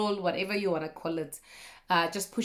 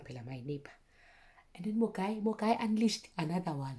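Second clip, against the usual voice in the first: hushed, lowered voice, kept down, under the breath; 6 dB quieter than usual. Telling a story, with a neighbor nearby: keeping voice down. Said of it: "Let me keep my voice down".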